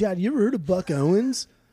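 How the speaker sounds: mock relaxed, drawling voice. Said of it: "'cause he talks like [name] too".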